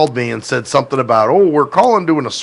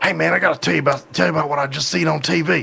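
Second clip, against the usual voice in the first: put-on heavy, thick rural Southern country accent; 3 semitones higher, 4 dB quieter than usual. Retelling how a man would start telling him about tv, in a thick southern country accent. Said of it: "he had a real thick, you know, of course, southern, you know, country accent".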